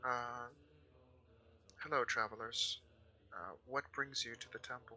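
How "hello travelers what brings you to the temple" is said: very soft, quiet, gentle and kind voice. Game master voicing a man at a temple greeting travelers, soft kind tone. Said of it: "in a very kind of like soft tone".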